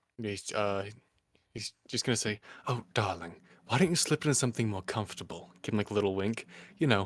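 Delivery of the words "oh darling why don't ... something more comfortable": whispering and faster. A game character stares a man in the eyes to drive him away, whispering. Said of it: "whisper something to him with dissonant whispers".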